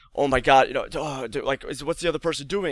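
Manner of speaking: put-on frantic panic. Retelling a dad's reaction to news of a car accident: imitating frantic panic. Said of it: "He was just frantic, and he was panicking".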